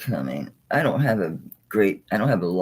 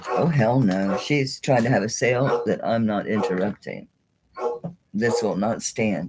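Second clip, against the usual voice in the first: ordinary delivery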